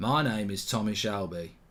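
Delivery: slow, matter-of-fact character voice. Tired after streaming a lot, introduce yourself to viewers in a very slow, matter-of-fact Tommy Shelby voice. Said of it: "I speak very slowly and matter of fact like".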